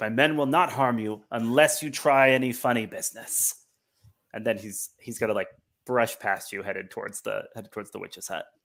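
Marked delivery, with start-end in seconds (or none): 0.0-3.5 speaking up, voice lifted. Game master voicing a leader whose men guard the players: raised voice. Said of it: "He like raises his voice".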